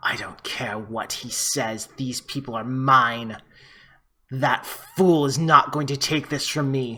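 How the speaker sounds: vampire voice snarling, full of anger. Voicing a vampire who turns and snarls at another vampire: snarling vampire voice. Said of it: "looks at him and snarls and says".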